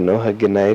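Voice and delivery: ordinary delivery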